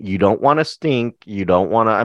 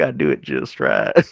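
put-on southern politician voice, lower; 9 semitones lower than usual. Joking about playing a situation right: Bill Clinton voice. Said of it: "that's my best Bill Clinton voice".

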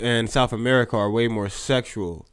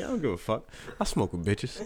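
breathy, mocking whisper; 9 dB quieter than usual. Urging a friend to repeat his line: mocking imitation of a friend.

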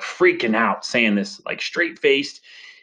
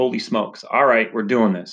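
ordinary delivery

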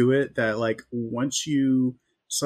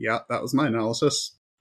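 put-on deadpan delivery, lower pitch; 3 semitones lower than usual. Retelling a scene where Greg is in crisis, the speaker imitates Joe's deadpan. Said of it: "Joe is just like deadpan".

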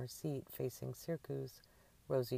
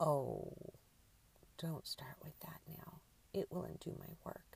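breathy, whispered, grumbling mutter under the breath; 4 semitones higher, 3 dB quieter than usual. Reading a character's reply to another character's question: muttered. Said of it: "Annie muttered".

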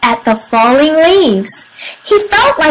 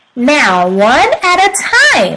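plain reading voice

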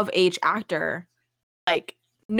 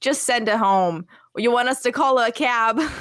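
put-on full-on, thick New York accent; 3 semitones higher than usual. A speaker quotes the school principal in a super New York accent. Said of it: "Why is he like super New York?".

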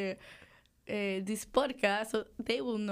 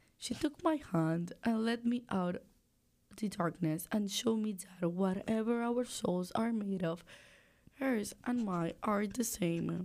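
unconvincing attempted British accent in a man's voice; 4 dB quieter than usual. Speaker told to go and read a line aloud, failed British accent attempt. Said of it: "That was English with a man's voice".

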